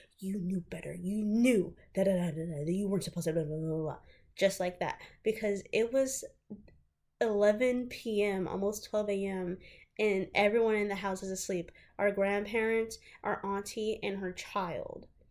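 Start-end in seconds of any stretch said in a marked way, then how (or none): 0.2-4.0 put-on hushed whisper, faster. Telling a family story, the speaker repeats what Sugar said, imitating Sugar's hush whisper. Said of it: "Sugar was hush whispering".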